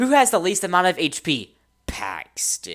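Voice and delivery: high, sing-song, mocking teacher voice. Repeating how she just called out a player's name during the game, in a mocking teacher tone. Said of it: "I sound like that kind of a teacher who um who's like who who makes fun of her".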